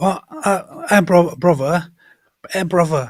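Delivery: put-on trashy, unsophisticated British accent. Acting out how a man talks, trashy British accent. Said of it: "It's more trash".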